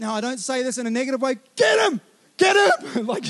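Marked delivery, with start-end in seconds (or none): 1.5-3.1 put-on pitched-up, drawn-out cheering yell. Retelling parents on the sideline losing it: imitating parents yelling from sideline. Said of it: "parents on the sideline that are losing it".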